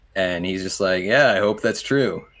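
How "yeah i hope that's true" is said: self-assured, cocky, smug swagger in voice. Voicing a dean greeting a general with a firm handshake: cocky smirking voice. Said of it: "this dude doesn't stop with a cocky smirk ever".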